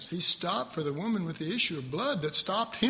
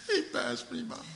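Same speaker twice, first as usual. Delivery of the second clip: mock pitiful, hurt, high whimpering lament; 7 semitones higher, 3 dB quieter than usual. Acting out blind Bartimaeus being passed by, Bartimaeus mock whimpering. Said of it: "I was really kind of whimpering".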